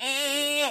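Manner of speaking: high, squeaky voice. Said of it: "I'm starting to get that squeaky".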